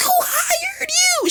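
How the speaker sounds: put-on very high-pitched, shrill, frantic screaming yell. Retelling the same student losing control: imitating someone freaking out. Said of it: "she just spazzes out like".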